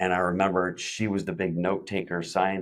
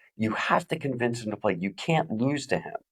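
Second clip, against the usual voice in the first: put-on screaming, higher pitch; 4 semitones higher than usual. Retelling how a dad screamed at his son: imitating a dad screaming. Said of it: "his dad is in the background screaming at him".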